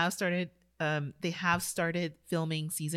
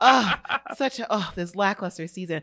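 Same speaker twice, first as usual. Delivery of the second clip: put-on relieved tone, louder; 8 dB louder than usual. Imagining listeners glad the season stopped: imitating relieved listeners. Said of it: "I had a thought of some listeners like".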